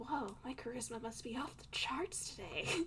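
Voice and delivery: muttering under the breath. Voicing a character's aside in a role-play conversation, under her breath. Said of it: "under her breath".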